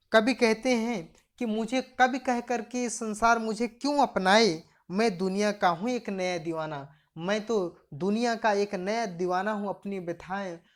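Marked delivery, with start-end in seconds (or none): none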